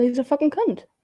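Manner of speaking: plain upper-class English delivery. Answering a request to say a line because of the accent: requested line in own accent. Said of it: "just because of the accent, can you call him".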